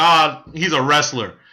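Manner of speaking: slow, casual, nonchalant, offhand tone. Retelling the father's answer at a picnic: imitating a nonchalant reply.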